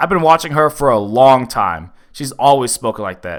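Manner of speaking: ordinary delivery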